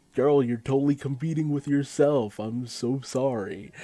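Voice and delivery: loud, exasperated call-out.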